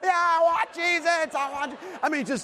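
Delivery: put-on child tantrum voice. A parent retelling their young child's outburst: imitating a child's tantrum. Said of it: "the full-blown tantrum".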